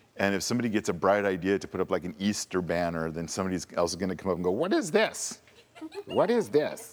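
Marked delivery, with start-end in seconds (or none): 4.5-7.0 very high pitch, slow sing-song, every word stretched, disapproving. Imitating someone objecting to an Easter banner: Church Lady voice. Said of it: "I sound like the church lady".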